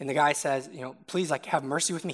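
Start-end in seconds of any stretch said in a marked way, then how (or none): 1.1-2.1 put-on begging, pleading tone. Retelling a parable, the debtor begs the king: imitating a begging plea. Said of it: "He begs with the king".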